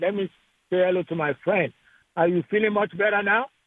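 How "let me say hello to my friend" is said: ordinary delivery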